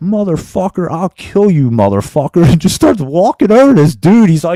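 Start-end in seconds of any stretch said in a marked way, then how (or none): 0.0-2.4 menace delivered perfectly, dead calm. Retelling a man pulling a knife on someone, imitating a calm threat. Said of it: "just as calm as you could ever see anybody".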